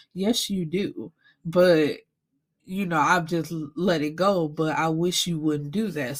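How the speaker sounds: normal talking voice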